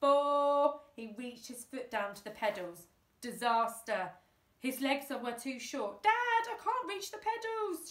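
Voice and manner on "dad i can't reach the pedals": shrill, very high cry. A boy at the steering wheel shouts to his dad, shouted. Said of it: "shouted the boy".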